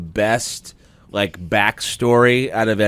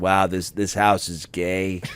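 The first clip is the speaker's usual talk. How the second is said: absent, low, totally flat deadpan delivery; 4 semitones lower, 6 dB quieter than usual. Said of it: "he's extremely deadpan".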